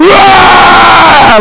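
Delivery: loud, high-pitched yelling.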